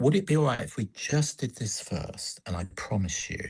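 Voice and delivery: put-on gentle voice. Retelling how a stepdaughter calms a child: imitating someone speaking gently. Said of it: "she just says it very gently".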